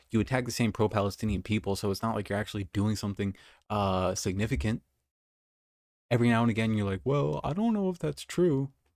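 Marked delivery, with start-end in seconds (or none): 7.0-8.7 put-on taunting, mocking voice, high and drawn-out. Mimicking the person being criticized, in a put-on mocking voice. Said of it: "Sorry to do the mocking voice".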